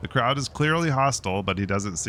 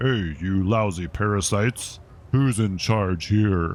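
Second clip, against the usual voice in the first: surprisingly deep dragon puppet voice, ventriloquist style. A young man voices his dragon glove puppet at the crowd, deep ventriloquist puppet voice. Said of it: "ventriloquize in a surprisingly deep voice".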